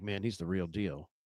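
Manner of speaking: grave, very low, dead-serious tone. Retelling a quote from Ray Ray McCloud: imitating Ray Ray McCloud's very serious tone. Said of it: "he said it, like, you know, this way, it was, like, so serious".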